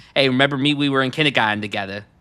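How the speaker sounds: hugely exaggerated, over-the-top Boston accent. Quoting a favourite movie line: imitating an over-the-top Boston accent. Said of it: "I love a movie with over-the-top Boston accents".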